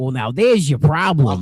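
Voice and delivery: put-on Italian accent. Describing a game level, the speaker quotes Mario in an Italian-accented Mario voice. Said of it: "he sounds all Italian like this".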